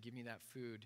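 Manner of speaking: ordinary talk, nothing marked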